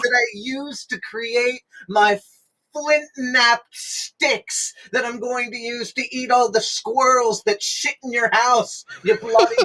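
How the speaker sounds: very high, shrill, furious screaming. Rolling to intimidate in a game, the character hurls a screaming threat. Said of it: "scream, and I say".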